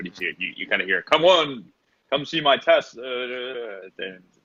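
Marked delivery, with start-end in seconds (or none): 1.0-3.0 loud, high, booming shout. A narrator voices a man shouting in the market square, booming shouting voice. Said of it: "he has kind of a booming voice".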